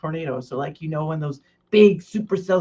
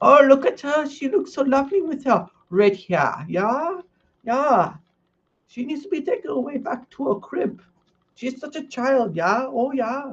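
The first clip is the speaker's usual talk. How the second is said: put-on German accent, pitched up, held throughout; 8 semitones higher than usual. Speaking to a viewer in a put-on German accent. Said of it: "speak to you in a German accent".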